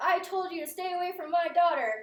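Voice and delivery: shrill, very loud, high-pitched yelling outburst. Retelling a folk story, voicing a father warning a man off: shouting. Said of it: "So he starts shouting".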